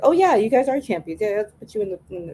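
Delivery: plain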